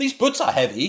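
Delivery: very high, shrill, oddly over-loud weird line reading. Retelling how Helen delivered her film line: imitating a loud, weird line delivery. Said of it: "she says it so loudly and so weirdly".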